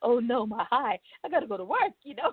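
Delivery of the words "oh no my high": mock alarmed, frantic, high panicked cry. Telling how the nurse said to wait out the high, speaker is retelling own panic. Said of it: "So I'm panicking".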